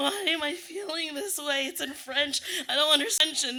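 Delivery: very high, loud sobbing through words, acted out. Retelling being left crying in class after the other kids left, mock sobbing. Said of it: "[sobbing noises]".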